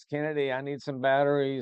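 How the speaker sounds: play-acted, high, calling-out yell. Retelling calling out of an office for batteries: imitating own past yell. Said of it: "I'm yelling out of my office".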